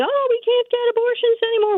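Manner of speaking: put-on very high, rushed, gushing emotional pleading. Mocking how the women are pushed emotionally, quoting them: mock-emotional complaint. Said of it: "Emotionally pushing".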